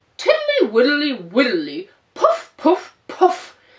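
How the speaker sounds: fat, puffed-out, loud, sing-song toad voice. Reading a story aloud, speaking as Mr. Jackson: Mr. Jackson's fat voice. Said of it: "you nasty old toad, ... she heard someone coughing in a fat voice".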